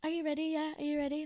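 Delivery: dominant, commanding, take-charge, in-control voice. Retelling what a friend says while being filmed: imitating a friend's dominant alter ego. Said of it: "she turns into this, like, completely different person when she straps".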